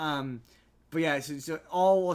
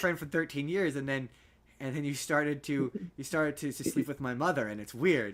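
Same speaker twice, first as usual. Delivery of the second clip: plain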